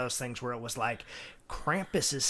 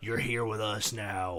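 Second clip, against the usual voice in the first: put-on low, creepy male voice; 4 semitones lower than usual. Retelling a scene where the candle blows out: put-on creepy man's voice. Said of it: "in a guy's creepy voice".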